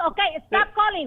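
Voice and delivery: worked-up, heated voice. Telling a caller to stop or she will call police: heated. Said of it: "calm down".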